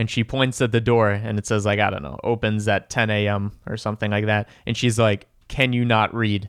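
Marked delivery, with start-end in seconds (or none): 5.5-6.5 play-acted, very aggressive, hostile, confrontational snap. Retelling a woman pointing at the door's opening-hours sign; retelling an aggressive snap. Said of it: "in a very aggressive voice".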